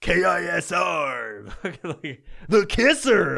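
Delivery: very slow, creaky, odd radio DJ drawl. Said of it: "this weird fucking voice that they all do".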